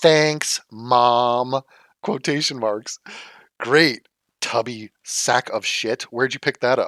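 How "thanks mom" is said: put-on sarcastic young teen voice. Speaker mocks someone's sarcastic quotation marks as an emo thirteen-year-old, mock-sarcastic. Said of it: "the sarcastic, like emo thirteen year old".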